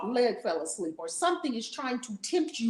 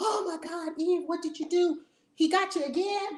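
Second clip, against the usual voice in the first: acted-out, high-pitched yell; 8 semitones higher than usual. Retelling a story where Adam calls out to Eve, retelling Adam's yell. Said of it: "Adam starts yelling out to Eve".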